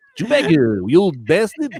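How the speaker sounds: swooping, animated cartoon voice with swinging pitch. Greeting Chewbacca in a Lando Calrissian impression turned Simpsons voice. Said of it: "now he's a Simpsons guy".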